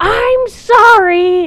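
shouting at full volume. Retelling a story at a barbecue restaurant: imitating someone shouting at full volume. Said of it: "says at the top of her lungs".

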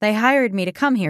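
plain

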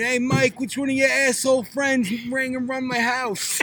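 put-on Long Island accent. Retelling the next-door neighbor screaming at Mike, in a Long Island accent. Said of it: "the Long Island accent".

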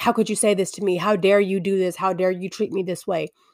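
normal talking voice

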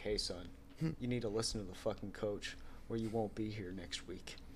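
very quiet, calm, level, barely above a murmur. Imagining Tim Duncan telling you off, imitating calm Tim Duncan. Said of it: "he just probably talks to you calmly like".

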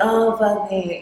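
groaning, moaned outburst. Retelling watching a video, imitating a moaning voice from it. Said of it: "the voice was like".

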